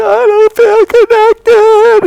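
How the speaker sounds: play-acted hysterical sobbing, very high and loud. Retelling what she said to him the next morning, imitating hysterical crying. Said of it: "she's just hysterically crying".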